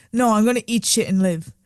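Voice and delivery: normal talking voice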